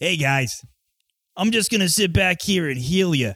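goblin character voice in a Jersey accent. Imagining how the character would sound, the speaker does a Jersey accent goblin. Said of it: "Jersey accent goblin".

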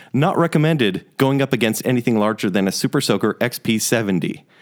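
normal talking voice

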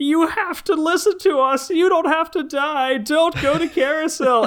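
put-on hysterical screeching pleading, pitched way up. Retelling a movie scene, the speaker acts out characters on a balcony, mock hysterical pleading. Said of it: "They just start hysterically pleading to people".

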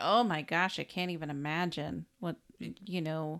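plain

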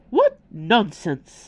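loud, scoffing, dismissive snort. Mrs. Teapot answers Bella's question, snorting. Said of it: "snorted Mrs. Teapot".

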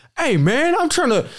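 acted, angry, very high, cut-off, annoyed protest. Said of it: "[name] gets hella pissed off".

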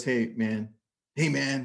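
casual voice with a rasp. Retelling what a speaker said backstage, imitating Grant Cardone's raspy voice. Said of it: "with his raspy voice".

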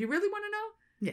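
put-on small, very high, little Irish accent. Retelling a conversation with a man, quoting him in his little irish accent. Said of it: "In his little Irish accent".

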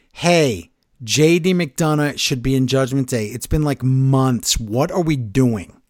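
ordinary delivery

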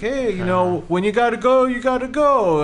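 bad put-on Brooklyn cop voice. Retelling what an understanding cop said, in a terrible Brooklyn cop accent. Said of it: "that's my terrible Brooklyn cop accent".

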